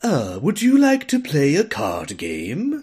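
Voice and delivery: goofy, high, sing-song put-on British accent. Describing a character who asks to play a card game, doofy british accent. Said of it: "He actually has a really doofy British accent where he's like".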